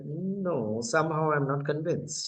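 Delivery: ordinary talk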